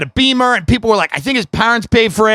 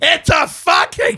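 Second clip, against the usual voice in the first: put-on furious outburst, held in, scream-like; 7 semitones higher than usual. Retelling how Howie screamed at the secretary over a deal, retelling a furious scream. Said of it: "scream at the secretary and go".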